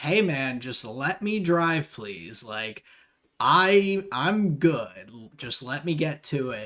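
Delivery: fed-up, frustrated, exasperated voice over radio. Retelling a driver's later radio message: imitating a frustrated driver. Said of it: "you could just hear the frustration in his voice".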